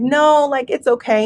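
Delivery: ordinary delivery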